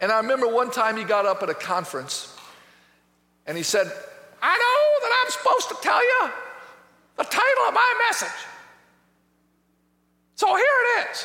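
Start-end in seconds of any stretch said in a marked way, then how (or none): 4.4-11.3 very high, squeaking preacher voice, little and squeaky. Speaker retells a man addressing a conference, imitating a high squeaky voice. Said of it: "He had a high, squeaky voice".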